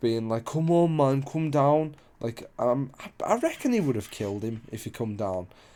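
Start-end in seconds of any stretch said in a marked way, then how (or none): 0.4-1.9 put-on sloshed, drunken young man's voice. Retelling a man asking a kid to come off the roof: imitating a drunk man. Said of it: "drunk as fuck".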